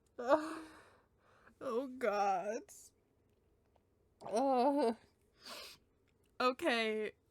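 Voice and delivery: tearful voice, close to crying, tearing up. After accidentally swearing on a recording while Cloud laughs; tearing up. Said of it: "I'm actually tearing up".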